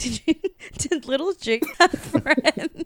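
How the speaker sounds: laughing while talking, high. Teasing another speaker with a question, laughing while talking. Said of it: "why are you guys laughing at this?".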